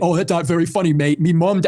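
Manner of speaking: mocking old man voice with English accent. Mocking what an old guy from England is going to say: mocking an old guy from England.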